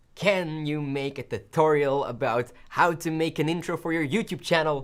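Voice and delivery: ordinary talk, nothing marked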